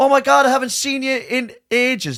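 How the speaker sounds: very high, loud, shrill, room-filling nasal voice. Telling how a woman greeted a couple so everyone could hear, imitating a loud, nasal woman. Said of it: "she was loud".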